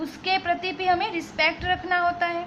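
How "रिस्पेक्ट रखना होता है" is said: normal talking voice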